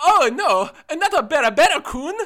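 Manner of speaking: put-on anime girl character voice. Announcing a new take, the speaker does it in an anime girl voice. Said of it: "like I'm an anime girl in an anime".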